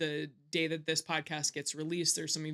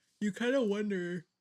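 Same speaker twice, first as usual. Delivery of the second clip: speaking mid-yawn, higher; 5 semitones higher than usual. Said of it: "I'm yawning".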